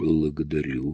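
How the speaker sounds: mumbling politely. The narrator replies to the woman after dropping the cleaver; a polite mumble. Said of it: "насколько мог вежливо промычал я".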